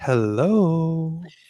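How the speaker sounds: drawn-out phone voice, hello stretched. Retelling how she answered the phone after yelling at the kids, imitating her phone voice. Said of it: "Phone voice".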